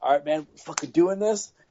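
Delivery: put-on eager, pumped-up, excited voice, rising. Retelling joining a stranger's game to help: imitating own excited self. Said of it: "very excited".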